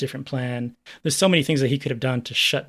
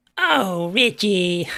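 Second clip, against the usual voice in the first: put-on robot maid voice, higher pitch; 7 semitones higher, 4 dB louder than usual. Contrasting a film robot's voice: Irona impression. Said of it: "That's a good Irona".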